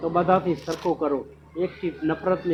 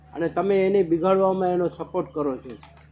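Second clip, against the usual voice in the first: usual speaking voice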